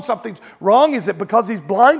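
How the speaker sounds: ordinary talk, nothing marked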